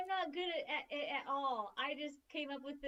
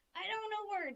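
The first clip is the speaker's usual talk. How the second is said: grunting goblin voice, much higher pitch; 6 semitones higher than usual. Describing their goblin, the speaker shows it off in a grunting goblin voice. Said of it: "He's just gonna be like".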